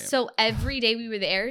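normal talking voice

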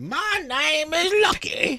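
put-on very high old prospector voice. Introducing a character he has just created: Lucky, old prospector voice. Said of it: "But the old prospector".

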